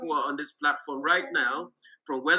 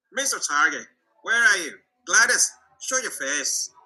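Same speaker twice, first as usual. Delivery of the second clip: worst possible put-on Irish accent; 3 semitones higher, 4 dB louder than usual. Calling out to gladys to show her face, in a bad irish accent. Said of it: "that's my worst Irish accent ever".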